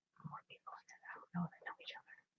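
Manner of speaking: hushed whisper. Talking with a companion who then asks why: whispering. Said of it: "Why are you whispering?".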